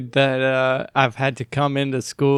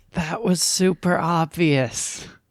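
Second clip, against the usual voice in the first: slow, hushed whisper; 3 semitones higher than usual. Whispering back to another character in the game: whispering back. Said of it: "I whisper back".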